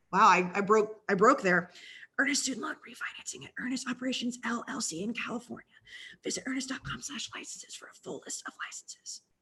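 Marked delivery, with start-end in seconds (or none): 2.1-9.2 quieter, faster, sickly whisper. On a podcast, a host reads the rest of an ad's legal fine print in a sick whisper. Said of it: "Do you want me to do the the low voice really quick?".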